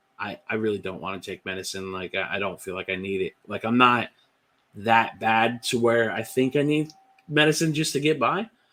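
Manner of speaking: ordinary talk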